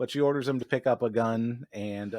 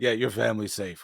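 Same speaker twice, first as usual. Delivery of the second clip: put-on sinister voice. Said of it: "a very sinister look sounding voice".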